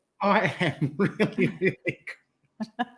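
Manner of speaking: very slow, giggly, drawn-out words. Answering how they are after greetings, giggling while talking. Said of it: "I've got the giggles all of a sudden".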